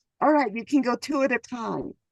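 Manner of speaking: ordinary delivery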